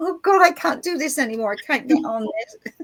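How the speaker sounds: high, weepy crying voice. Retelling a struggle with technology: imitating own crying. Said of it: "sometimes I'm crying".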